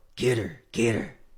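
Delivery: mock-demonic dark yell in a put-on demon voice. Retelling yelling at their ex after waking from sleep: retelling a demonic dark voice. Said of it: "with this, like, demonic dark voice".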